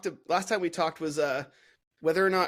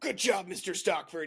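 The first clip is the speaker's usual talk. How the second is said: mild, held-back, put-on child's called-out voice; 2 semitones higher, 3 dB quieter than usual. Retelling how a fourteen-year-old shouted from across the room: retelling a shout across a room. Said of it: "he just shouts from across the room".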